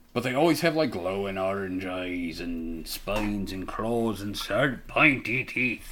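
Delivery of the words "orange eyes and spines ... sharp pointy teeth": put-on Scots-accented comic, comedy-sketch style delivery. Describing creatures to the other speaker, slipping into a Monty Python-style Scottish accent. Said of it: "Why'd you say that like a Scott?".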